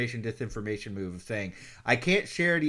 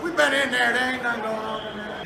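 put-on crazy strange voice, higher; 11 semitones higher, 4 dB louder than usual. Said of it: "the guy with the crazy voice".

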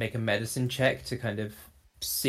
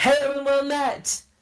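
thunderous yell, much higher; 5 dB louder than usual. Player character speaking with thaumaturgy in a roleplay game, thunderous yell. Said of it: "I yell and there is like a thunderous weight to it".

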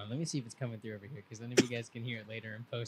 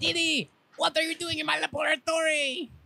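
very high-pitched cartoon little boy voice. Naming a cartoon, the speaker quotes a line in Dexter's voice. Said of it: "Dexter's laboratory".

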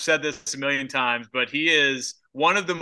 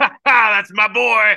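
very loud, high, roaring exclamation laughed through; 8 semitones higher, 10 dB louder than usual. Imagining a father's reaction to his son's injury: imitating Vince laughing. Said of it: "or he was laughing like".

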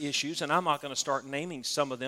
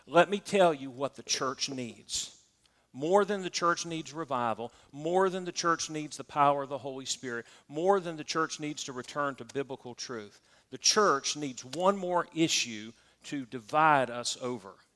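usual speaking voice

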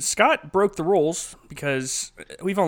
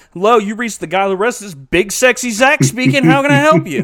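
put-on very loud, high, showing-off kid voice; 7 semitones higher, 9 dB louder than usual. Speaker retells answering the phone as a boy during Monday Night Raw, imitating his 10-year-old self. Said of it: "My little 10-year-old self answered the phone".

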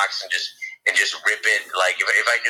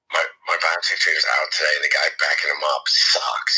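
put-on whisper, lower pitch; 5 semitones lower than usual. Retelling how a sales trader answered on the phone: imitating a whisper. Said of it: "whispers into the phone".

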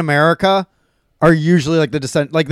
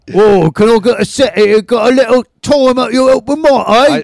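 put-on Cockney accent, loud and high; 6 semitones higher, 6 dB louder than usual. Imitating someone asking for a set at an open mic, in a Cockney accent. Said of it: "he's talking like a Cockney".

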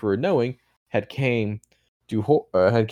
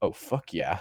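mock gleeful, eager yes, lower and quieter; 4 semitones lower, 9 dB quieter than usual. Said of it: "boo-hoo, he goes".

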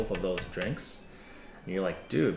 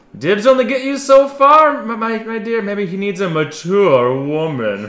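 booming mature-woman voice, very high, very loud; 12 semitones higher, 16 dB louder than usual. Voicing a character who answers a rival's claim: booming voice. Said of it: "Her voice booming".

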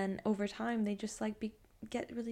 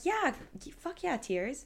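play-acted, fired-up, swooping, enthusiastic cheering; 4 semitones higher than usual. Retelling how they react when someone cries: imitating cheering someone on. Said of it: "cheering them on".

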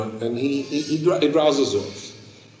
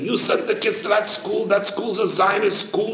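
acted, shrieked, high-pitched scolding scream; 9 semitones higher than usual. Retelling how someone reacted to the school choice: imitating someone screaming. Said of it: "She starts screaming at me".

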